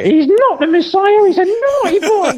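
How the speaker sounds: pitched way up, loud and shrill. Quoting the film after Monty Python is mentioned, in Brian's mother voice from Life of Brian. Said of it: "the voice of Brian's mother".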